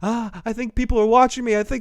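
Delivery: nervous, high, panicky little bird voice, whimpering. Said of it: "And she goes".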